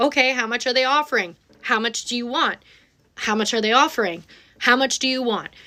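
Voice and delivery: ordinary talk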